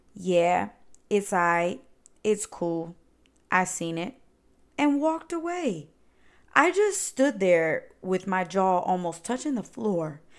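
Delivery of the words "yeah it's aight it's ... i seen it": ordinary talk, nothing marked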